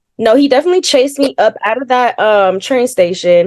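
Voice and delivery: ordinary talk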